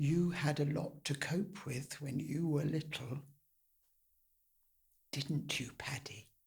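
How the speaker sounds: mock near-whisper. Performing a play, retelling mother's quiet reply: imitating mother almost whispering. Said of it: "she almost whispers".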